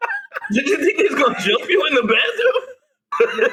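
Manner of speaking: high, laughing disbelief.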